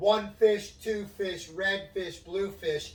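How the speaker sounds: high-pitched yelling.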